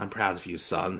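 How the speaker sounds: soft, hushed half-whisper. Retelling a scene where Goku hugs his son goodbye: Goku half-whispering. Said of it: "and just whispers".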